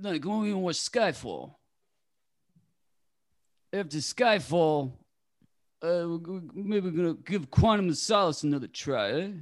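sly impersonation voice. Showing off a newly practiced impression: Sly impression. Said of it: "working on a little Sly impression".

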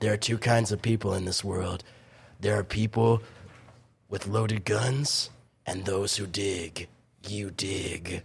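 low, quiet grumble under the breath. Quoting a favorite line from the end of a film, in a grumbly Clint Eastwood voice. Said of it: "it's just like that grumbly voice".

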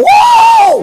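high, loud holler of delight. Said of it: "I holler".

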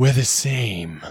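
put-on gruff cowboy voice. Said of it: "Certainly not Clint Eastwood".

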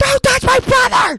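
put-on little girl's shriek, very high-pitched and very loud. Repeating the line the way she said it before: imitating a child screaming. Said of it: "the way I said it before".

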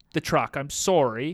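ordinary delivery

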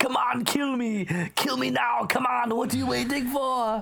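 put-on German accent, pitched way up. Retelling an actor's movie line that ripped off Arnold: Arnold-style German accent. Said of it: "because of the German accent".

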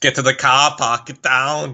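Boston accent, action-hero voice. Joking with a co-host about accents: Boston Arnold Schwarzenegger voice. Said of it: "Boston Arnold".

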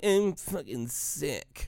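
high, slow, whiny, belly-aching tone. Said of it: "you're not like".

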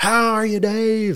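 mock very high, loud shouted voice. Retelling Topper greeting Dave as they walk through the door, retelling a yelled greeting. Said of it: "Topper yells it".

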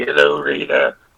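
terrible, gruff, raspy voice, very deep and low. Describing the 90s alien monkey character to another speaker: gruff alien-monkey impression. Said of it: "Who talks kind of like this?".

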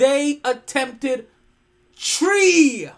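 put-on loud, high-pitched Caribbean accent. Restating the point about the Bills' loss so people can understand, in a Caribbean accent. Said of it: "Let me say this in Caribbean".

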